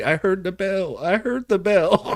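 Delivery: tiny, small, high squeaky little voice. Game narrator voicing a voice the players hear, in a tiny squeaky voice. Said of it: "the tiny squeaky voice say".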